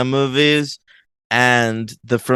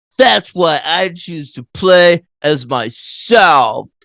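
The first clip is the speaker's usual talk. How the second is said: stilted, badly delivered, high child-actor reading; 5 semitones higher, 4 dB louder than usual. Mocking a kid's monologue, the speaker does a mimicking of a badly delivered kid monologue. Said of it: "one of the worst delivered kid monologues".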